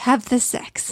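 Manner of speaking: put-on muttering under the breath. Retelling finding someone crouched over zucchini flowers: Tech Deck muttering under his breath. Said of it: "muttering to himself under his breath".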